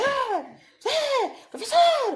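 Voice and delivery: high, slow mock yell in an unruly boy's voice. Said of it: "Eu só sabia falar gritando".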